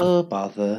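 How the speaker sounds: slow, drawn-out, depressed delivery. Podcast hosts mocking a Winnie the Pooh intro: mock-depressed Winnie the Pooh. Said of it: "like a really bit of a more drawn out, uh, like depressed one".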